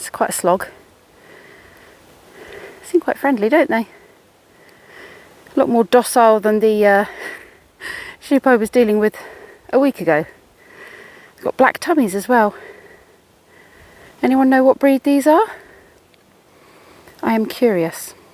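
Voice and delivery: out of breath, breathing heavily. Walking up a steep hill past grazing sheep, heavy breathing. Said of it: "Excuse the heavy breathing".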